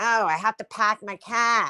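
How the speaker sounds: put-on local accent, r dropped, park said pack. Mocking how others talk, totally different from the speaker: mimicking their accent. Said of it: "Like that. Like I don't talk like that".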